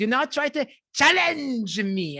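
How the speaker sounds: put-on French-accented villain voice. Showing how the Expendables villain talks, in Jean-Claude Van Damme's French accent. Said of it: "with his French accent, where he's like".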